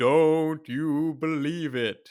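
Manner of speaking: loud, high, eerie, spooky ghost voice. Retelling a film moment where a man faces the camera; spooky ghost voice. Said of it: "says in like a spooky ghost voice".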